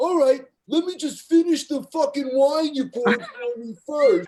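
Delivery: defiant, unbothered tone. Speaker retells what a man answered; imitating his reply. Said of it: "He goes".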